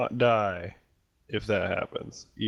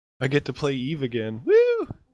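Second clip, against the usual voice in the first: bubbling over with excitement, high and loud; 4 semitones higher, 5 dB louder than usual. Speaking to the group after asking if they hear it: excited voice. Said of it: "can you hear the excitement in my voice".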